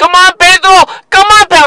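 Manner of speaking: loud yelling, high-pitched, called out across distance.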